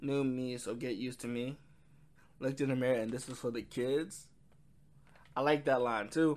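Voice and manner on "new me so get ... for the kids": ordinary delivery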